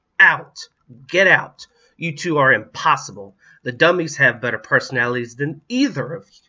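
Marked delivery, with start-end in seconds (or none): 0.2-3.4 loud, impatient shrieking. A mother cuts off her two squabbling kids in the kitchen with an impatient shriek. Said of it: "Powell ordered with an impatient shriek".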